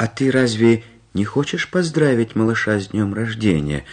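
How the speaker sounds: plain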